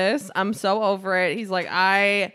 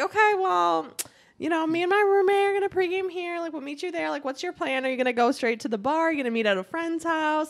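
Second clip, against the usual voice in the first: pitched-up texting voice; 8 semitones higher, 4 dB quieter than usual. Retelling own text reply to someone coming from out of town: own texting voice. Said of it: "That's my texting voice".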